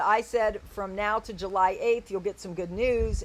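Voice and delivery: ordinary talk, nothing marked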